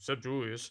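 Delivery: muttering quietly under breath. Retelling a joke from a player interview: Theo Pinson muttering under his breath. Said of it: "and then under his breath, Theo Pinson goes".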